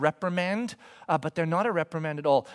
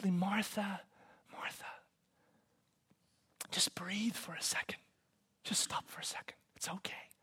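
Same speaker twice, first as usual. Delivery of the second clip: very quiet, hushed, tender, deeply gentle near-whisper; 13 dB quieter than usual. Retelling words spoken to a woman in a scripture scene, said quietly. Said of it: "he says quietly".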